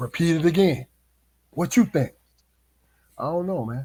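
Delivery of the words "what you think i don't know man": put-on whispering. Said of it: "start whispering, men and women whispering".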